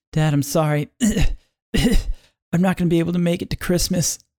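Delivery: frail, feeble voice. A son lying in a hospital bed speaking to his dad, very weak. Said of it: "Son is lying very weak in the hospital bed".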